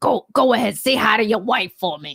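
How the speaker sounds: threatening, menacing tough-guy voice with New York accent. Joking about how a greeting can sound, in a put-on threatening New York accent. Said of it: "If you do it in like a New York accent, it sounds like a threat".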